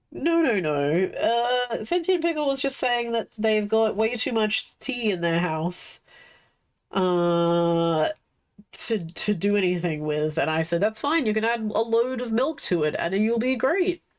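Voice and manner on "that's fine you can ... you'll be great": tongue-in-cheek, sarcastic tone. Retelling own sarcastic reply to a chatter about having too much tea: retelling own sarcastic reply. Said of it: "a very good sarcastic exchange".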